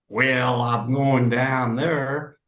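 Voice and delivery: slow, drawling Texas accent. Comparing American regional accents, demonstrating a Texas accent. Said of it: "a Texas accent".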